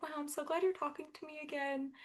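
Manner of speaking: mock very hushed, sweet, sincere, soft and high. Retelling what he said once they talked again, imitating a sweet, genuine tone. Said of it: "in a really sweet and genuine way".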